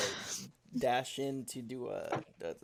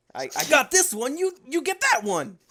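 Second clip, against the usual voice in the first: angry character voice, much higher; 14 semitones higher, 11 dB louder than usual. Player, asked by another to go next, answers in an angry Inosuke voice. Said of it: "in an angry Inosuke voice of".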